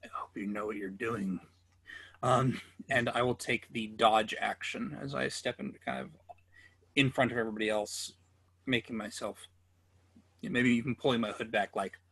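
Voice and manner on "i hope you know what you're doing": low, hushed mutter under breath. A player, in character, speaks to Bran, muttered under breath. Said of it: "kind of under my breath".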